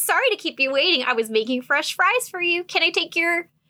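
high, polite, courteous customer-service voice. Retelling how a fry cook turns to greet customers at the counter, customer service voice. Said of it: "turns on his best customer service face with his best customer service voice".

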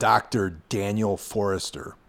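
ordinary talk

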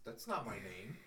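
very low, very quiet, hushed voice.

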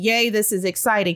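ordinary talk, nothing marked

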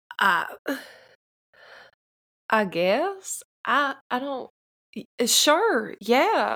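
uncertain. June answers a question from a talking blood tree, uncertain. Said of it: "You sound a little uncertain".

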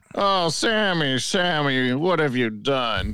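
very slow, energy-free, flat sarcastic delivery. Retelling how a commentator called a moment: imitating JR, flat and sarcastic. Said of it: "it just sounds sarcastic, you know, like, with no energy".

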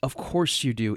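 put-on breathy, patronizing half-whispered put-down tone. Quoting a film character's reply to the woman who loves him: imitating a patronizing tone. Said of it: "in a really patronizing way".

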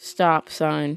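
put-on bored tone. Retelling how a DMV clerk prompted a test taker: imitating a bored voice. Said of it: "just all bored like".

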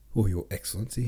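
ordinary talk

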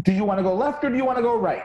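aggressively polite tone.

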